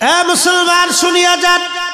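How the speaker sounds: very high-pitched calling out.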